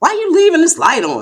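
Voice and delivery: very high, harsh, shrill scolding tone. Showing how not to ask about a light left on: harsh scolding tone. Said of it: "with my face all contorted and my tone messed up".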